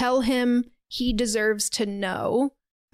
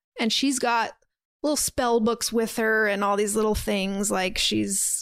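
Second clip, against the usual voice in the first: ordinary delivery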